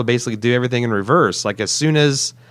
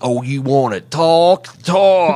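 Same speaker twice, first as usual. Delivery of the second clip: bad Southern accent, pitched up; 3 semitones higher than usual.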